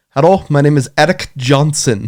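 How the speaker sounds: put-on deep Indian accent. Retelling a call from an unknown number, quoting the caller in a deep Indian accent. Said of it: "the guy in a deep Indian accent said".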